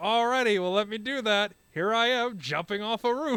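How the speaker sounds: sarcastic high voice. Retelling a game's tutorial scene: imitating a sarcastic character. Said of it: "great sarcastic moments".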